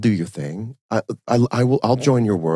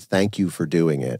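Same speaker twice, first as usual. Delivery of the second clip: mock-nervous voice, lower; 3 semitones lower than usual. Imagining his reply to an offer of help, imitating a nervous thank-you. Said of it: "he would have said nervously".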